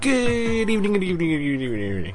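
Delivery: mock upper-class English voice. Opening the show with a Stephen Fry-ish impression to keep it classy. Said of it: "that was a Stephen Fry-ish impression".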